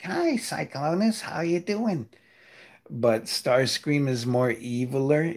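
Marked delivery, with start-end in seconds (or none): 0.0-2.1 high, swooping, sing-song cartoon voice. Voicing the character Tailgate greeting Cyclonus, SpongeBob voice. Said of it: "I used the SpongeBob voice for Tailgate".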